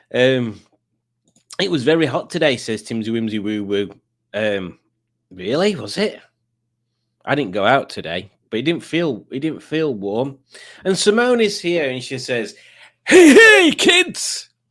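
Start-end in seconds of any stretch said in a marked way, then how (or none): 13.0-14.4 very high, very loud, poorly done put-on clown voice. Retelling a greeting someone said, in a failed Krusty the Clown impression. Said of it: "didn't sound anything like Krusty".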